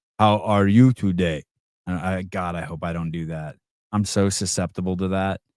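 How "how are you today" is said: Russian-accented delivery. Describing mirroring people, demonstrating talking to a Russian in a Russian accent. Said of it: "you start talking like a fucking Russian".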